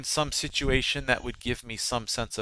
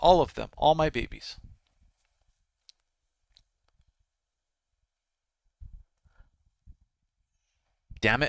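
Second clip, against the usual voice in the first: choked-up voice catching, on the edge of crying. Imagining your family leaving this earth too soon, choked up. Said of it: "I'm feeling myself choke up".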